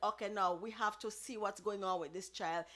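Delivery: ordinary delivery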